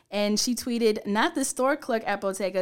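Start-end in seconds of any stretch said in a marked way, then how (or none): none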